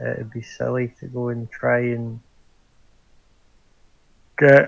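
speaking through a yawn. Talking with others about going to see the king, yawning. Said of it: "Sorry, yawning".

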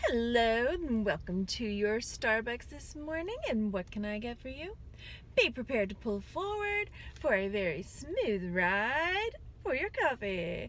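airline intercom announcer voice, drawn out. Retelling a starbucks order taker's greeting, in a pilot or flight attendant voice. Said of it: "sounded like, I don't know, like a pilot or a flight attendant".

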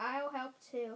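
ordinary delivery

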